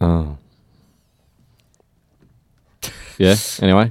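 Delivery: let down, disappointed tone. Reacting to a name correction, Brian not Brendan, sounding disappointed. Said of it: "you sounded so disappointed by that".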